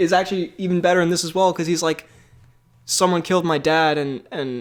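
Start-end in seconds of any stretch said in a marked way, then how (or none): none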